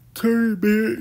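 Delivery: talking through a yawn. Sorting through items to keep, talking through a yawn. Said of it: "sorry, I'm yawning".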